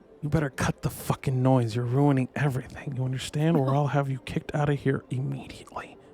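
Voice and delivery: threatening, menacing, hushed whisper. Narrator voices a man pulling the listener close, whispering in their ear. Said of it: "he kind of whispers in your ear".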